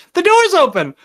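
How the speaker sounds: acted frightened yell. Retelling a movie scene where a character warns MacReady: imitating a scared shout. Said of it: "he's, like, scared or whatever".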